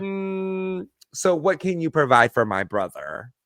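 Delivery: pointed, slow, probing, sizing-up tone with drawn-out mm. Imitating the opinionated sister questioning a new partner: imitating probing sister. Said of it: "And the other one is like".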